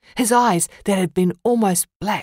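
ordinary delivery

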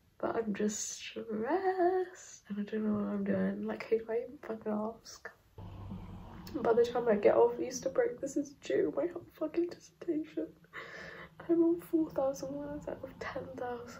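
high, teary venting on the verge of tears. Talking to camera about being stressed, on the verge of tears. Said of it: "I don't wanna cry on camera".

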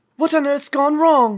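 frightened, alarmed voice. Narrator reads a girl's question after the children splash back onto dry ground, frightened voice. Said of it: "said Polly in a frightened voice".

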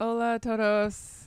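put-on strong non-native accent in Spanish. Recalling first doing stand-up in spanish, speaking with a strong accent. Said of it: "I would speak with a strong accent".

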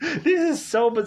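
very high-pitched voice, cracking and breaking apart. A speaker recapping a movie reacts to its plot, voice cracking. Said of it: "I'm sorry that my voice cracked there".

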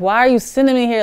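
put-on high, rushed, tearful crying yell of a young child. Retelling being dropped off as a first grader, imitating crying and yelling.

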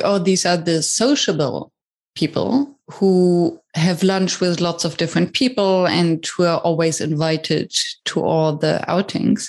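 ordinary delivery

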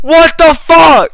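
loud, high, ecstatic triumphant screaming.

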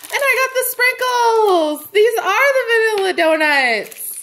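thrilled, very high, loud, swooping gush. Finding the piece hoped for from a series: excited high-pitched voice. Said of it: "Sorry if I'm too high-pitched".

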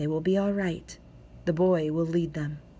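warm, low tone. A man to his wife, taking her hand amid a frightened crowd; warm, low tone. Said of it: "spoke in a warm, low tone".

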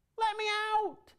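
tiny, very high voice crying out. Reading a story aloud, a voice calls from inside the oven: small voice crying out. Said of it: "a small voice cried".

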